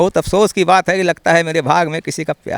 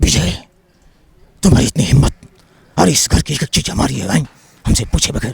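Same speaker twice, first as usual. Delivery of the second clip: put-on elderly old man voice; 3 semitones lower than usual. Showing the audience how Amitabh Bachchan speaks now that he is old, elderly Amitabh Bachchan voice. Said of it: "Amitabh Bachchan अगर बूढ़े हो गए हैं अभी, वो कैसे अब बोलते हैं".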